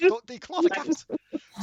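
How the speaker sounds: high pleading cry.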